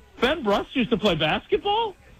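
high, laughing, joking mock disbelief. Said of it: "I jokingly, ... said".

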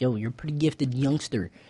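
ordinary talk, nothing marked

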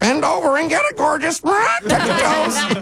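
very high, squeaky little pet voice. Telling someone what the pet Nibbles squeaked at the UPS guy, squeaky Nibbles voice. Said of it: "Nibbles squeaked".

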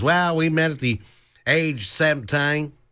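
put-on strong Southern American accent. Quoting a woman from northern Florida, in a thick southern accent. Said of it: "she had quite a thick southern accent".

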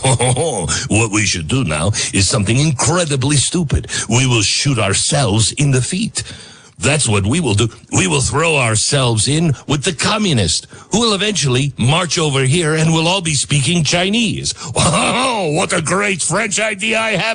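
scornful, mocking put-on politician voice. Mocking the prime minister's china idea by imitating him. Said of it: "'cause it was much more like".

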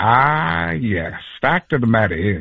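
slow, deep, dropped low voice, taking its time. Showing how to learn an impression, dropping the voice low: Morgan Freeman voice. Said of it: "how to learn to do Morgan Freeman".

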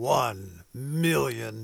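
deep movie trailer announcer voice. Radio host announcing a donation challenge: movie announcer voice. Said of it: "It is hard not to say that in movie announcer voice".

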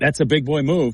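plain

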